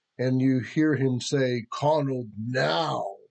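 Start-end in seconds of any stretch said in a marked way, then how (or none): 1.7-3.1 rumbling, commanding, god-like voice. A voice speaks from within the castle, shaking its walls: powerful, loud god-like voice. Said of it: "It's so powerful and loud".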